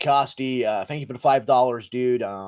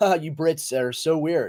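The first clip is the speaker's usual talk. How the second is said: usual speaking voice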